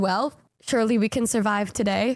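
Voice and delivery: plain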